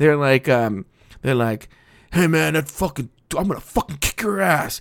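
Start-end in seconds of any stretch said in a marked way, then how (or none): 2.1-4.8 mocking, put-on angry male voices. Joking about how straight guys talk when they get angry: imitating angry straight guys. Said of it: "straight guys get angry".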